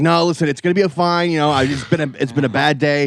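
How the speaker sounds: high, panicky, anxious-sounding voice. Retelling a man at an ATM on the phone to his wife: imitating a panicked man. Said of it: "talking panicked to his wife".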